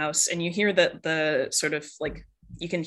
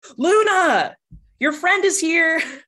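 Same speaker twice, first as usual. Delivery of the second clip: slow, very loud, high yell, name drawn out; 13 semitones higher, 10 dB louder than usual. Voicing a mom who turns around and yells into the house: yelling into the house. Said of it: "turns around and yells".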